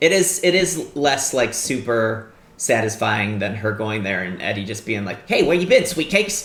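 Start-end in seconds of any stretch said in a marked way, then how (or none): 5.3-6.5 put-on old-time radio announcer voice. Imitating Eddie greeting her at the end: 1950s radio guy voice. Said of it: "he sounds like a nineteen fifties radio guy".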